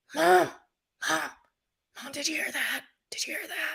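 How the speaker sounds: frightened, hushed, high whisper. Retelling a frightening night, the speaker reenacts calling to Mom, retelling a scared whisper. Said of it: "Like I'm whispering".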